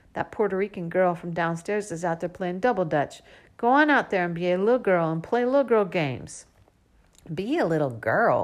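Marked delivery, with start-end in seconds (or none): 7.4-8.5 mumbled under breath, much slower. Narrator, told to go play outside, answering to himself, mumbled under breath. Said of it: "I mumble under my breath".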